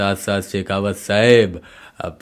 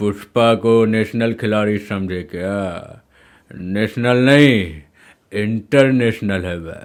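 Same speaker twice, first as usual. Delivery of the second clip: muffled, thick, mumbled voice as if chewing. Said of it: "मुंह पे कुछ chewing कर रहे हैं".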